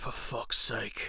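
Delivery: mock-whispered, hushed mutter under the breath. Retelling how a man whispered under his breath: retelling a whisper under breath. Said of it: "he whispers under his little".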